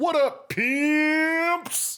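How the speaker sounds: high-pitched squeal, drags out "pimps". Opening the show, doing an Ethan Klein-style greeting: Ethan Klein impression. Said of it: "I'm always tempted to do the Ethan Klein".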